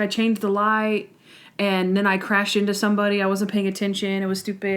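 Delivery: ordinary talk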